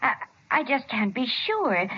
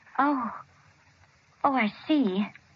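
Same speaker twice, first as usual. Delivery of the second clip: unhappy, let-down tone with no pleasure. A mother hears from her son that he has been discharged and cured: not sounding very happy. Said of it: "You don't sound very happy about it".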